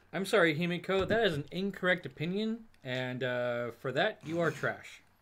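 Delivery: mock-serious, heavily laid-on sarcasm.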